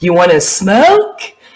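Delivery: cutesy, perfect, really cute little voice. Retelling an offer to smoke at a party: imitating Cynthia's cute voice. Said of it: "this really cute voice she does".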